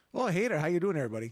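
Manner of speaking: loud, hearty, put-on Canadian accent. Asked to do an accent for each country named, given Canada: Canadian accent.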